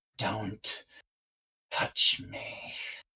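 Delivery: soft, whispered mutter under the breath. Voicing a character whose face contorts in rage: muttered under her breath. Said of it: "you hear her say under her breath".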